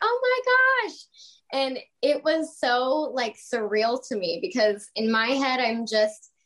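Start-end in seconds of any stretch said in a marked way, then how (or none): 0.0-1.0 very high-pitched, thrilled, excited squealing scream. Retelling a girl at the mall meeting her: imitating an excited screaming girl. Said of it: "this girl started screaming".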